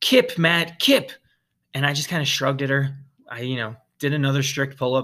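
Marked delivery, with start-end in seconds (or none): 0.0-1.1 light, urging called-out shout. Retelling someone shouting across the gym at a failing lifter: imitating someone shouting. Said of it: "she's shouting across twenty-four Hour Fitness".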